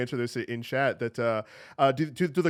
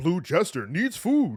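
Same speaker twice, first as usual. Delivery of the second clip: arcade game announcer voiceover style; 3 semitones higher than usual. Recalling the same game voiceover line: Gauntlet voiceover voice. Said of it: "I remember that from, from Gauntlet".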